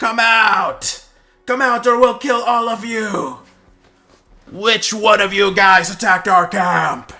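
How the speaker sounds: very loud, very high, shrill goblin shout. Narrating the game, the storyteller speaks as the big goblin outside, in a big goblin voice. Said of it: "the voice from the from the big fella goblin".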